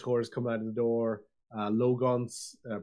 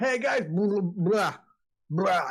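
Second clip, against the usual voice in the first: choked, gurgling watery voice, pitched up; 8 semitones higher, 3 dB louder than usual. The narrator voices a character's intimidation spoiled by splashing water, choking on water. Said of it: "got you in the throat".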